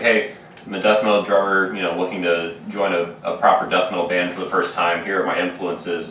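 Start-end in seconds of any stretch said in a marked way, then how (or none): none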